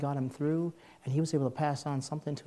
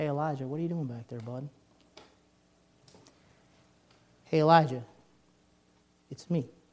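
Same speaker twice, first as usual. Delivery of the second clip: still, small, quiet voice. Retelling the Elijah story as the Lord calls to him, the Lord's still small voice. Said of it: "And then a still small voice".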